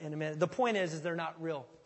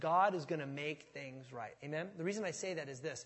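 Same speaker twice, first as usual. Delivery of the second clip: normal talking voice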